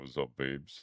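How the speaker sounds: deep, low voice. Warming up their voice, the speaker greets listeners in a deep voice. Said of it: "I've got one of those deep voices right now".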